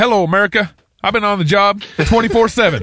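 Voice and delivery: put-on Texan politician voice. Quoting a comedy skit, impersonating a president: George Bush impression. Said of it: "Will Ferrell skits is him impersonating George Bush".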